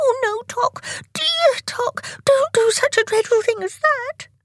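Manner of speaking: very high-pitched, begging, pleading voice. Tick answers his brother Tock, begging. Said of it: "begged Tick".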